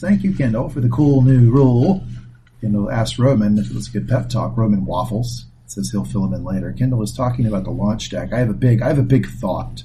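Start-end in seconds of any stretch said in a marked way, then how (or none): 0.0-2.0 sarcastic, mock-grateful tone. Recapping a show scene, quoting Roman thanking Kendall; retelling mocking thanks. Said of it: "Roman mockingly says".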